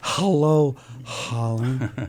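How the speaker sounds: mock, imitated breathy voice. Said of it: "in a breathy voice".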